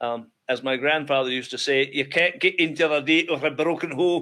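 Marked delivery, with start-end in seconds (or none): 1.9-4.2 put-on heavy Scottish accent. Quoting a grandfather's old saying: thick Isle of Bute accent. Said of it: "he went all Scottish on us".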